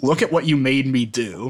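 normal talking voice

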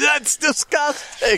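mock yelp pitched very high. Retelling a group of girls reacting to a dog; retelling a yell. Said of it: "they start yelling".

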